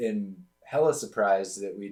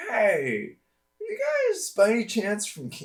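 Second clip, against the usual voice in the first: very high-pitched, swooping stoner voice; 14 semitones higher than usual. Speaker retells what a man said to their group, in a high-pitched stoner voice. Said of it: "It's kind of like a stoner, like high pitched".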